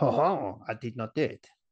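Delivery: put-on French accent. Retelling a man denying the graffiti, in a French accent. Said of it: "But in a French accent".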